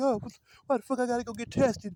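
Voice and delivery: acted-out high, whooping hollering. Retelling how women react when asked to get tested: imitating someone hollering. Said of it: "hooping and hollering".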